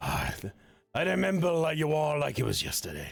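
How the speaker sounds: thick, burly dwarf voice. A dwarven friend approaches each returning companion, in a thick, burly dwarf voice. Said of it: "It is our lovely dwarven friend who has the god dwarf in them, / yeah, a thick, burly voice begins to emit from as the rest of it fades away from them, and the familiar sight emerges, standing tall in".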